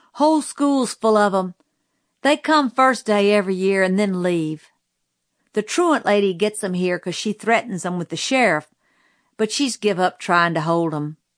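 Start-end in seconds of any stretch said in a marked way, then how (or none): none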